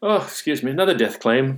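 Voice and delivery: put-on English accent. Retelling what a man told clients when his laptop beeped, in English accent. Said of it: "when he had that English accent".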